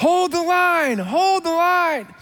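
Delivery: rallying battle yell, pitched very high. Retelling a movie hero carrying the flag back into battle: imitating someone yelling. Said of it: "And he's yelling".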